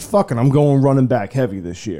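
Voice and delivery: normal talking voice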